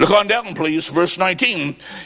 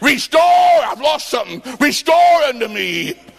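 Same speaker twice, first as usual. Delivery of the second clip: put-on, raised, pitched-up crying out; 8 semitones higher than usual. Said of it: "He cried out and said".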